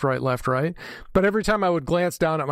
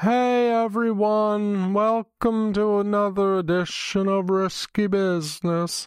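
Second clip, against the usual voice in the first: very slow, dragged-out drawl, pitched up; 6 semitones higher than usual. Imitate how the Risky Business podcast sounded when you played it, in a Patrick Gray slow voice. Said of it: "doing the Patrick Gray slow voice".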